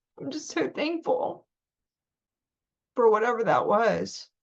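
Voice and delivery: voice rising with emotion. Speaker recounting a terrifying encounter that rocked their world, getting emotional. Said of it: "I'm getting emotional".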